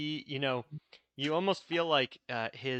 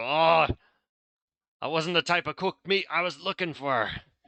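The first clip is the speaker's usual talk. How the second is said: put-on loud pirate accent creeping back in; 3 semitones higher, 7 dB louder than usual. The game narrator voices a poacher hit in the shoulder by fire: pirate accent. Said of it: "starting to devolve into like a pirate accent again".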